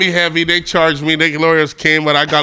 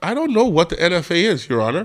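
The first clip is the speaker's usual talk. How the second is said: ordinary talk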